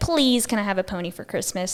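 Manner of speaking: ordinary talk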